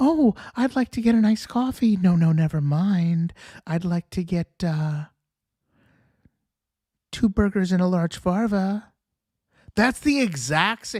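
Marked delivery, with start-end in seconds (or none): 0.0-8.9 mimicked childish put-on baby voice. Speaker mimics how a woman ordered at the drive-thru, imitating her baby voice. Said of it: "That's the voice she used at the drive-thru".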